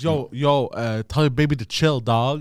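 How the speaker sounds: lazy, slow, laid-back skater-bro drawl. Retelling a video where a skater dude tells a friend: imitating a skater dude talking. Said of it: "he's talking like that".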